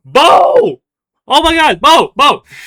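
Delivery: very high, loud shouted calling out. Narrating a scene, someone calls out from the EC, calling out a name. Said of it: "you hear calling out from the EC".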